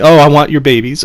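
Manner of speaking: ordinary talk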